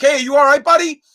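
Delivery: put-on high-pitched yelling. Retelling calling out a truck window to a kid on a bike: imitating himself yelling. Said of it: "yelling out the".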